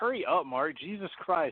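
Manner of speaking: motherly, mom-style voice. Acting out a wife telling her husband to hurry up: imitating Melissa sounding like a mother. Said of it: "a whole impression of you basically sounding like my mother".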